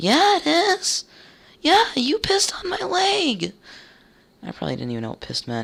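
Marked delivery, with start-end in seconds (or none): 0.0-3.5 put-on very high, swooping, squeaky child's voice. The speaker acts out their younger self at school, squeaky kid voice. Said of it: "It was fucking squeaky".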